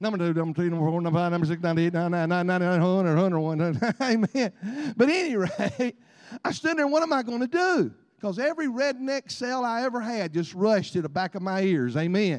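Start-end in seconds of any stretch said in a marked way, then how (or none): 0.0-3.9 auctioneer patter, lower and louder. Joking that he sounds like an auctioneer, counting off numbers in auctioneer patter. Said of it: "I sound like an auctioneer".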